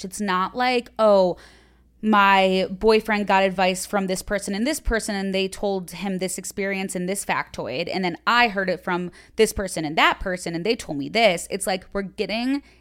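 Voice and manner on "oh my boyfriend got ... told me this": ordinary delivery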